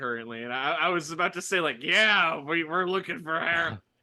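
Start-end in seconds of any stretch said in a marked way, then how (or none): 1.8-3.8 loud put-on ghoul voice, fully in character. Answering the ghoul while copying its voice: copying the ghoul voice. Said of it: "I just started doing the voice that you are doing".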